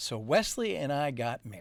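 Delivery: ordinary delivery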